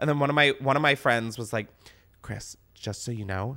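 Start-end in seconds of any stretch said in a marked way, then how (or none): 2.2-3.6 put-on timid whisper, quieter. Retelling what a friend said on Valentine's Day: imitating a friend speaking quietly. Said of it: "said this so quietly".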